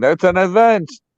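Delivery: mock high, called-out holler from a distance. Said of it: "somebody yelled across the building".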